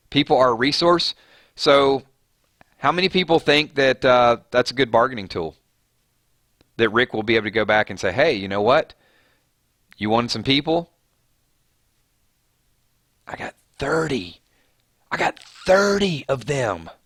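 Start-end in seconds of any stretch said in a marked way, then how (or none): 8.2-16.8 persuasive, haggling dealmaker's negotiating delivery. Acting out a negotiation with Negan over people: Rick voice. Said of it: "that was my Rick's voice trying to negotiate".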